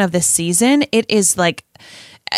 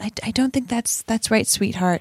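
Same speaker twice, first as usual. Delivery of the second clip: mock-gentle, put-on soft and gentle tone; 6 dB quieter than usual. Recapping a tv episode, quoting a character correcting another on the subway: mock-gentle correction. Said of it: "And she gently says".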